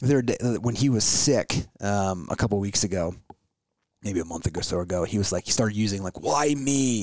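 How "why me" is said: put-on whiny voice, much higher. Retelling how he complained while sick weeks ago; imitating a whiny voice. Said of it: "Like in that whiny voice".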